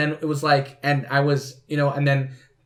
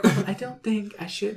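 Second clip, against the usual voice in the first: high peaked ladylike voice; 6 semitones higher, 4 dB quieter than usual. Teasing a friend whose voice peaked when refusing to do an accent: mimicking a voice going high. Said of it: "your voice just peaked and you're like".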